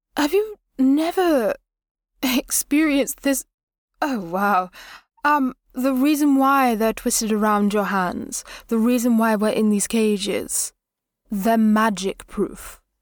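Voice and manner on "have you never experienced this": puzzled, disbelieving, confused, pitched-up delivery. Voicing her reaction to a question: confused. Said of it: "in a confused".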